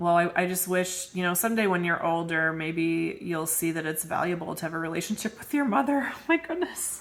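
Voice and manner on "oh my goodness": very high, breaking into laughter, laughing exclamation. Quoting a parent's goading remark, the speaker reacts, laughing. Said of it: "I'm sorry I'm laughing".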